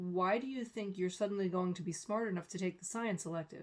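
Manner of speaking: ordinary delivery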